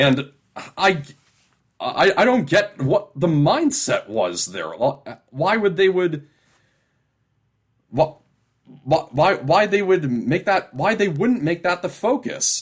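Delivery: stammering, tripping and stumbling over repeated words. A speaker trying to make a point and tripping over it: stammering. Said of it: "I'm sorry for all the stammering".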